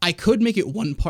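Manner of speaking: voice cracking and breaking. Explaining why a printed part is split in two, voice cracking. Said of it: "my voice is cracked so bad".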